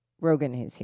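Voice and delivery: whispered. Speaker retells what Derek whispered to them at the party: retold whisper. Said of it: "whispers to me and says".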